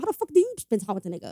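imitated Brooklyn accent. Quoting a girlfriend accusing the speaker, in a Brooklyn accent. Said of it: "You sound like a Brooklyn dude".

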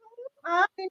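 mock held-in laughter. Retelling a reply to a student's drawing: imitating holding in laughter. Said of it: "I was trying to hold it in".

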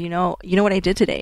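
ordinary delivery

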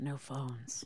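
calm, low, gravelly murmur, very quiet. Imagining how he would say it: Kiefer voice, calm and gravelly. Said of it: "his calm, gravelly tenor, just like".

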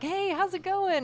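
very high-pitched, loud hollered yell. Recalling how a politician's aunt and uncle yelled hello: retelling a yelled greeting. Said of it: "like yelled to her".

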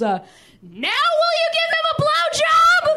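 very high, very slow, swooping angry yell. Retelling how she turned around and yelled at the speaker, retelling a yell. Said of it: "she turned around and she yelled at me".

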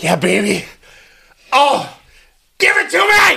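high, over-the-top passionate, sensual voice. Asked at dinner for an example on the spot, speaker does mock passionate dirty talk. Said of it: "of you talking passionately, dirty talk".

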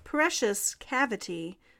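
ordinary talk

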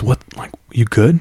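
imitated whisper. Retelling a friend's brother checking on his pale friend: imitating a whisper. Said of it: "he whispers".

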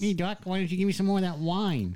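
high cartoon rabbit voice. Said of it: "You sound like Bugs Bunny".

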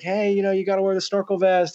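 blunt, high put-on shout. Retelling the plain way to tell snorkelers about vests: imitating someone yelling. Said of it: "instead of just yelling like".

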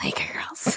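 whispered, breathy, over-the-top creepy voice. Trying out the creepiest possible way to say a phrase: exaggerated creepy voice. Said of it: "there's gotta be a creepier way. Like, what about, like".

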